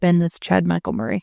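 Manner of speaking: ordinary talk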